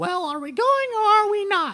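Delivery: shrill, very high, very loud rag doll voice. Voicing a rag doll puppet that greets a player character: rag doll puppet voice. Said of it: "I'm moving my hand".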